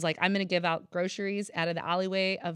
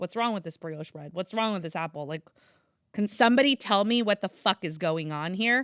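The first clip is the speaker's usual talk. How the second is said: put-on angry outburst, louder; 4 dB louder than usual. Retelling finding good food in a store's trash: retelling an infuriated rant. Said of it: "I was infuriated".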